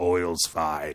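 put-on loose Russian accent.

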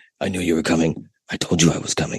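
put-on deep detective voice. Retelling a Family Guy scene with sick characters trading lines: imitating Family Guy deep voices. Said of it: "him and Joe did the deep voices back and forth".

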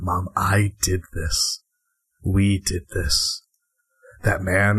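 very quiet whisper. Leaning in to confide in mom, whispering as quietly as possible. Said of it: "I whisper this as quietly as I can".

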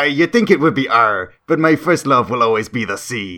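put-on pirate-style accent and voice. Telling a pirate joke to the other speaker, delivering the punchline in a pirate accent. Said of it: "How's my pirate accent?".

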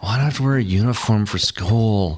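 mock grumbling, whiny child's complaining voice. Retelling a son's question while dressing for school: imitating a son complaining. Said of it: "he was complaining".

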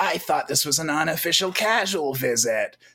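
put-on smoker woman voice. Quoting a little dragon boy's dialogue from the show, in a smoker-lady voice. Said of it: "all little boys sound like smoker ladies".

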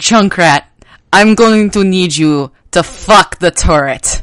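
loud, put-on Russian accent. Retelling what a player said over Overwatch voice chat: imitating a Russian accent. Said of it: "chat with a Russian accent".

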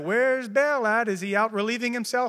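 mocking, scornful jeering. Retelling a scripture story to listeners, Elijah mocking, acted out. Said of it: "starts making fun of him".

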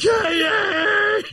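put-on climactic scream.

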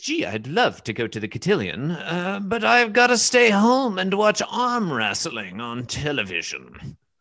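high, sing-song, restrained country bumpkin voice. Reading a comic panel's dialogue aloud, in a put-on comic character voice. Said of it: "It's easy to slip into caricature with this voice".

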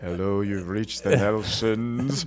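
deep, on-air radio-announcer voice. Imitating the other speaker's answering machine: imitating a radio voice. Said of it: "You sound like Ted Knight there".

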